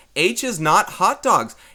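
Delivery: loud shouting. Explaining to students what H stands for in an equation: yelling. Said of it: "I'm going to yell this".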